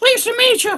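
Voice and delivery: very high puppet voice with northern accent. Showing a puppet he made one year, in its northern accent puppet voice. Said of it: "he's got that northern accent".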